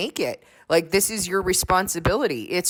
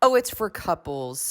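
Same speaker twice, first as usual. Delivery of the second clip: mock condescending, put-on patronizing tone. Quoting people who brushed off a request to join their small group, mock-condescending. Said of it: "condescending tone".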